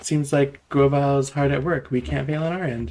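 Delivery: ordinary talk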